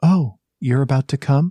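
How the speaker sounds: put-on whispered voice. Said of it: "she leans down to whisper in your ear".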